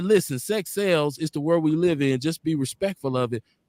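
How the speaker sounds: ordinary delivery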